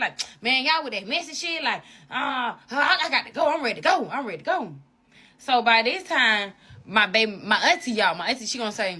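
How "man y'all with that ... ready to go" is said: mock angry tone. Retelling how the baby daddy answered: imitating him getting mad. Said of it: "he started getting mad".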